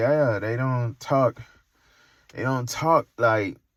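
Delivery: snooty, condescending, pretentious tone. Imitating how someone sounded talking down on an accent: imitating a pretentious tone. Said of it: "sounding very, like, pretentious".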